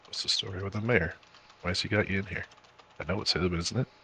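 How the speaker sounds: soft, hushed half-whisper under the breath. Questioning a prisoner in character about the mayor: half-whispering in character. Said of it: "I kinda whisper and be like".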